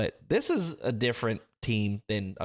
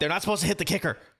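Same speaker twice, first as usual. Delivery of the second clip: put-on angry griping; 8 semitones higher than usual. A former kicker retells what he told his linemen, retelling an angry complaint. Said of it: "I got pissed at them because I'm like".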